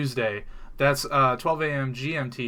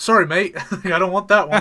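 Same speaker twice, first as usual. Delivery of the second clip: put-on Australian accent, higher and louder; 6 semitones higher, 9 dB louder than usual. Joking about a caster turning down a spot: put-on australian accent. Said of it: "I did it with an Australian".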